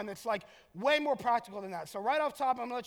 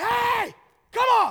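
flamboyant, shrill, very high, very loud screaming; 12 semitones higher, 11 dB louder than usual. Retelling calling her in from the porch: retelling his over-the-top screaming dad voice. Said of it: "over-the-top, flamboyant, screaming dad voice".

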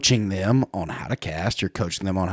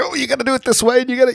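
acted excited, fired-up delivery, very high pitch; 4 dB louder than usual. Retelling a moment with Tommy, acting out getting excited and fired up. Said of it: "I'm getting excited and I'm getting fired up".

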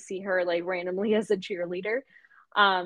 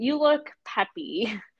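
put-on judgmental, condescending put-down tone; 4 semitones higher than usual. Recapping a scene where Rory gets judgmental with Lane: imitating Rory's judgmental tone. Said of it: "gets really judgmental".

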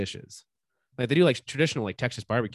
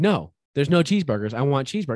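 put-on stubborn, loud, feisty little-kid insistence; 4 semitones higher, 6 dB louder than usual. Retelling a three-year-old son insisting on cheeseburgers: imitating a feisty child. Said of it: "getting all feisty about it".

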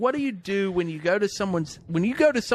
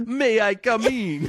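courteous vampire voice; 4 semitones higher than usual. Describing how a polite vampire would talk, in a Count from Sesame Street voice. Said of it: "I'm going to end up sounding like the Count from Sesame Street".

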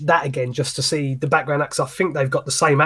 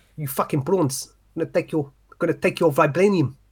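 put-on South African accent; 3 semitones higher than usual. Trying out accents in conversation, South African accent. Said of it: "that was South African".

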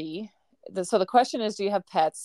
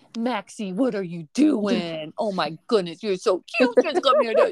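dog-talk voice, louder; 3 dB louder than usual. Showing the voice they always use on their dog: voice for talking to dog. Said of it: "I always do this one where I'm like".

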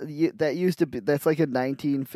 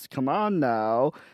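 put-on American guy accent. Describing how a character's dad talked, imitating an american accent. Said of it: "He talked like this".

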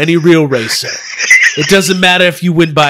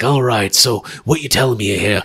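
put-on British Cockney voice, lower and quieter; 7 semitones lower, 6 dB quieter than usual. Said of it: "what does Shaw sound like? He's got a voice".

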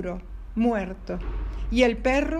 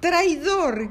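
shouted, yelling, higher pitch; 5 semitones higher, 4 dB louder than usual. The magpie joins the fox in turning on the dog, shouting. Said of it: "gritó la urraca".

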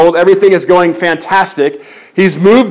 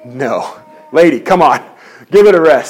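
put-on exasperated tone, pitched much lower; 5 semitones lower than usual. Retelling the story, the speaker voices Paul's answer to the woman, imitating Paul's annoyance. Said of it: "After many days".

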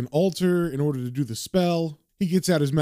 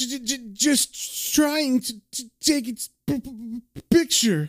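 very slow, pitched-up stammer on t and p; 7 semitones higher than usual. Recounting a scene, quoting a character on the ground holding his head, imitating a stutter. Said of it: "this is the moment that gave him the stutter".

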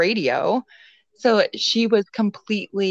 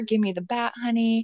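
put-on menacing tone, higher pitch; 3 semitones higher, 3 dB quieter than usual. Retelling how he backed her up the stairs: imitating a threat. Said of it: "threatening her".

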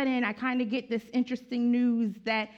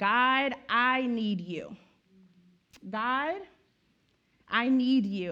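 very slow, drawn-out, acted crying out. Speaker retelling the day after she passed, re-enacting crying out to god. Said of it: "I just remember crying out to God".

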